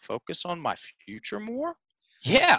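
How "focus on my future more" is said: rising, questioning tune on more. Retelling how he answered after being asked, said like a question. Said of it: "he said it like a question".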